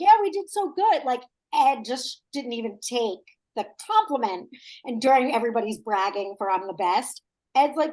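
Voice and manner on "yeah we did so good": put-on high-pitched, loud Philadelphia accent. Retelling how Ed answered a guy's remark after a challenge, imitating Ed's Philly accent. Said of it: "Great Philly accent you did".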